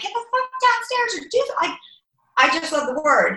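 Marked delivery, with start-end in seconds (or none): 0.0-1.5 shrill, very high-pitched hollering. Retelling what she says to her kids: imitating herself yelling. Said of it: "I yell".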